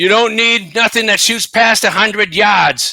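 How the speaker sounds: put-on Boston accent. Retelling what an australian woman said, a boston accent slipping in. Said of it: "I kind of got like a Boston accent in there".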